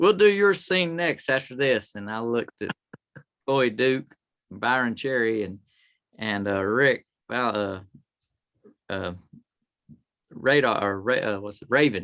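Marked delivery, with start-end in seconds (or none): 0.0-2.0 higher, louder calling voice. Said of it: "he says".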